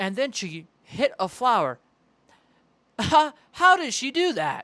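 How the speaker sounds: flat, loud, machine-like laugh in AI voice. Describing AI-voiced videos, mocking how their voices try to laugh; imitating AI voice fake-laughing. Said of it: "when they try to laugh and they go like".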